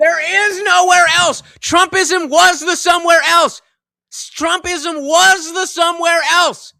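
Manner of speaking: shrill, heated, very high and loud shouting. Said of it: "I don't know why I'm yelling".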